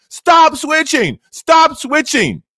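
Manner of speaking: mock screaming, high-pitched and drawn-out. Retelling how he screamed at his television in the last minute, retelling screaming at the TV. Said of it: "I was screaming at my television".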